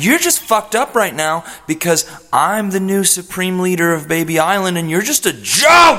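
heated rant. Answering someone during a rowdy group conversation: yelling. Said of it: "I'm sorry for yelling".

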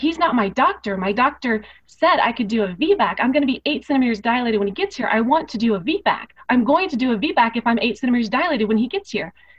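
acted-out very loud speech, near-yelling. A woman in labor retells what she told the nurse, retelling talking very loudly. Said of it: "but I am talking very loudly".

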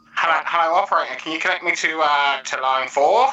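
put-on vintage telephone line voice. Demonstrating a voice effect made with virtual plugins; old telephone line voice. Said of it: "telephone exchanges where, and I can, I can do that one".

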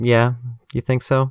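snide, catty put-on voice. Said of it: "With her fucking catty".

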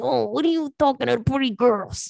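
put-on mobster accent. Speaker recounts what they say to a friend at the bar, talking like a Sopranos guy. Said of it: "talking like a guy from The Sopranos".

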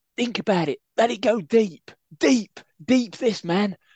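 shrill, very high, loud put-on ranting voice. Doing a half-remembered impression of a man, imitating his voice. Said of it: "I'm going to do the best his voice anyway".

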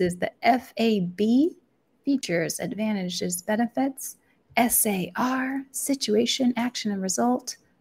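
slow, unhurried, deliberate, measured delivery. Listing frameworks for podcast listeners, saying these slowly. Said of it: "I'm going to say these slowly".

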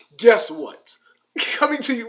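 loud, very high, showman announcer call. Praising a friend's announcer voice, the speaker mimics it: announcer voice impression. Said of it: "he even got the announcer voice".

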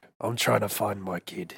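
low, very hushed put-on voice, almost under breath. Doing a quick voice bit: Jason Statham impression. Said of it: "That's Jason Statham. I just try to do a different voice than my own".

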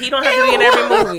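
high laughing shout.

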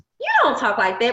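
ordinary talk

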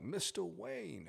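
very high, rasping, creaky put-on character voice. Showing how the Bane voice went on the first version: Bane voice. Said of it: "I did that voice".

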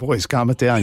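plain

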